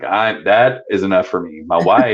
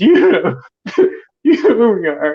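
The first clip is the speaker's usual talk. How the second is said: mock sobbing, higher and louder; 13 semitones higher, 4 dB louder than usual. Telling a story about a geocache hunt, acting out their past self: retelling ugly crying. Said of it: "And I'm like ugly crying".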